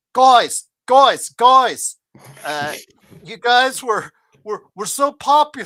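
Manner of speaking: loud, drawn-out put-on Australian accent. Retelling what Var told the guys: imitating Var's Australian accent. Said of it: "with his Australian accent".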